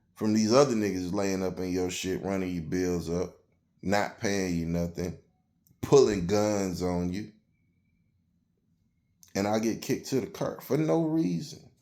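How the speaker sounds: ordinary delivery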